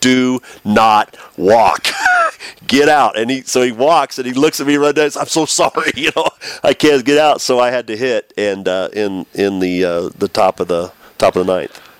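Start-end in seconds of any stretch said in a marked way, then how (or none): 0.0-3.2 loud yell, drawn out much slower. Yelling at a batter from the on-deck circle, retelling a yell. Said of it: "I'm yelling at Henry from the on-deck circle".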